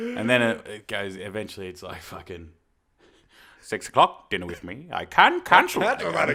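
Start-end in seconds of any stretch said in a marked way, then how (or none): 3.7-6.3 put-on grumpy creature voice. Performing a requested impression on a countdown: Grinch voice. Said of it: "Give us your best Grinch in three".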